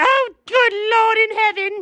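screaming in fright. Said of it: "Why did you scream?".

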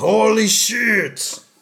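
put-on high, slow, loud old-man yell.

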